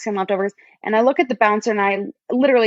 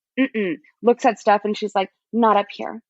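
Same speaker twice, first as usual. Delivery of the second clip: ordinary talk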